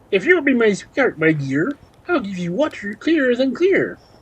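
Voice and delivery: high, storybook-style frog character voice. Reading a fairy tale aloud, the frog speaks to the third sister, in a frog voice. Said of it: "when the frog spoke".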